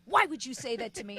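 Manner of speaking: furious, offended, indignant woman's voice. Retelling what an angry widow said: imitating an angry woman. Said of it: "she was fucking angry".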